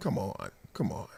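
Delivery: kindest possible, very soft, gentle hush. Recalling telling people to shut up, retelling a nice telling-off. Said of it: "shut up in the nicest way I can".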